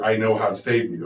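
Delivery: plain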